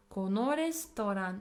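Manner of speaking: ordinary talk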